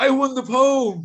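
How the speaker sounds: put-on heavy Italian accent, very high and slow. Retelling what an Italian waiter said: imitating a thick Italian accent. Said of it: "in a very thick Italian accent".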